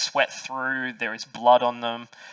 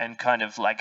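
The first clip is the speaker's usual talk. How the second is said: ordinary talk, nothing marked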